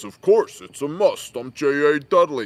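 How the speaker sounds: loud, booming, burly big-guy voice. Imitating Dudley, who talks real deep: imitating Dudley's deep voice. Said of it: "he talks real deep like this".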